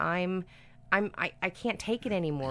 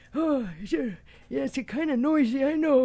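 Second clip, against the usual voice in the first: put-on raised, pitched-up old-timer old guy character voice; 6 semitones higher, 6 dB louder than usual. Retelling what a guy cutting down trees said, in an old guy voice. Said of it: "I like your old guy hey, voice".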